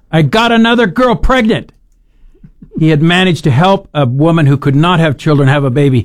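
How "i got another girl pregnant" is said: jubilant, high, excited shout. Speaker retells a father getting off the phone at sunday dinner, imitating him shouting. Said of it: "and then shouted".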